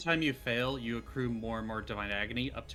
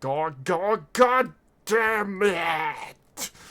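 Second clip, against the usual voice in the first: creature voice, much higher and louder; 8 semitones higher, 9 dB louder than usual. A game narrator ends the battle as the severed head flies over; severed monster head voice. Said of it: "the head of the f- thing fling over to you, saying".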